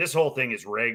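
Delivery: fake deadpan delivery. Retelling a ballplayer's video about the All-Star vote: deadpan Brandon Belt impression. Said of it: "so deadpan".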